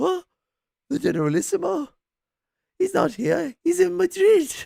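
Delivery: paranoid, frightened shriek, very high and loud. Retelling a TV scene where the Spanish waiter answers workers: imitating a paranoid, scared waiter. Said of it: "All, like, paranoid and scared".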